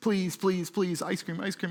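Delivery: put-on pleading like a young child, repeated begging. Acting out young kids begging for ice cream, imitating a child begging. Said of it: "It's kind of if you got young kids".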